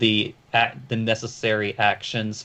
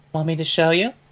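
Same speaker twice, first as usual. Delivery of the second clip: higher-pitched woman's voice; 7 semitones higher than usual. Voicing Raimi offering to show a player something: Raimi in a woman's voice. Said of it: "says in a woman's voice".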